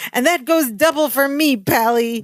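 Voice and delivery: mock restrained, held-back, high, mild yell. Retelling a sitcom scene where a character grabs the phone: imitating Balky screaming. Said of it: "screams into it".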